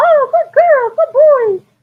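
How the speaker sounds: very high, squeaky, drawn-out praising voice. Showing how they praise after a gentle leash pull: high squeaky praise voice. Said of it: "I go into my high squeaky voice".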